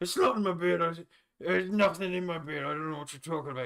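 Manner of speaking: put-on very loud, high, coy voice. Voicing an old man who denies hiding something in his beard: coy. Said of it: "He gets a little, like, a little coy about it".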